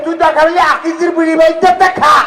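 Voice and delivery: angry, loud yelling.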